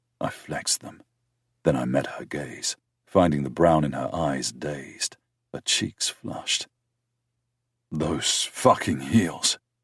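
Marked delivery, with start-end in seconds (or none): 7.9-9.6 harsh, much slower. Narrator voicing the speaker's words to a woman, harsh. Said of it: "hearing the harshness in my voice".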